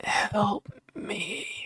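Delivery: faint, soft, rasping, scratchy voice. Voicing a faint voice heard in a player's head: scratchy voice. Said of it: "you make out a scratchy".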